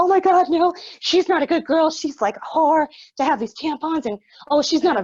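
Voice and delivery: panicked, frantic, worked-up, freaking-out rant. Retelling a woman's reaction in a story; imitating someone freaking out. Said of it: "She's like freaking out".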